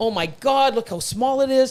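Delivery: mock, fast, rattled-off, frantic, panicky fretting. Imagining buying a tiny snake that may not eat: pretend panic. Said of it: "I'm panicking already".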